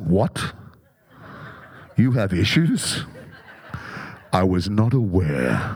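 very deep, low, divine god voice. Acting out God's reply to a person who says they have issues; God voice. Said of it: "That's my God voice".

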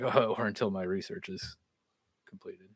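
quiet aside under breath. Retelling an episode scene where he speaks to his wife: imitating muttering under breath. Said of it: "under his breath".

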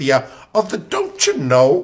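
Minnesota-style accent. Chatting about a woman's accent, the speaker demonstrates a Minnesotan accent. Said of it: "Minnesotan accent".

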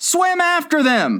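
very high-pitched, piercing scream. One character breaks into another's explanation: screaming. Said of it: "screamed the Gryphon".

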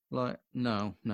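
ordinary talk

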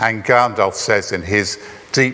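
plain

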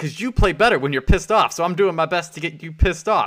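loud, high-pitched yelling. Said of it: "Wesley Snipes is yelling at Woody".

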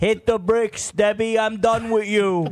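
put-on very high, very loud, shrill heavy Italian accent. Acting out the boss firing an assistant: Jackie Brucia voice. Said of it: "This is what Jackie Brucia sounds like".

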